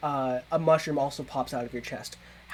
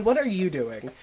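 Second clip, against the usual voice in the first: ordinary delivery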